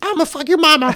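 put-on squeaky, very high little-kid voice. Complaining about kids on Fortnite, mimicking an 8-year-old: high-pitched kid voice. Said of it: "little 8-year-olds with high-pitched voices".

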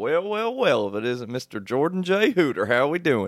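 put-on honky-tonk good old boy voice. Retelling how his foreman used to greet him, imitating a redneck good old boy. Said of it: "he's like some redneck honky tonk good old boy".

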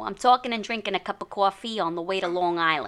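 put-on New York accent. Given a prompt line to read in regional accents, New York City accent. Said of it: "New York City".

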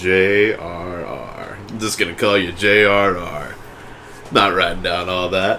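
low, slow, unimpressed official-sounding voice.

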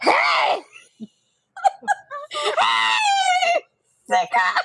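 shrill sing-song, very high, swooping high-pitched shout. Retell how she opened right after your banter, imitating her odd high-octave greeting. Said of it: "Why is your voice in that octave?".

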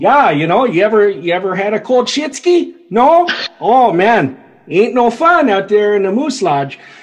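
put-on heavy North Dakota accent. Playing someone who says the word Shitsky: heavy North Dakota accent. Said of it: "Someone with like a really heavy like North Dakota accent".

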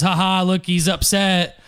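normal talking voice

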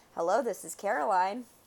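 ordinary delivery

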